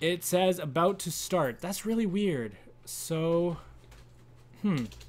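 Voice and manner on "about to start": usual speaking voice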